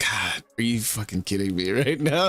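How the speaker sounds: discouraged, weary, defeated, beaten down. Voicing a character pinching his nose: discouraged and defeated. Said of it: "so discouraged and defeated".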